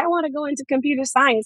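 mock proud tone. Retelling her answer when asked at an event about future plans, retold proudly. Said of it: "So I said proudly".

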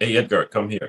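normal talking voice

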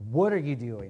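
challenging, accusing manner. Acting out a challenger questioning god: imitating a challenging tone. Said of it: "with that tone".

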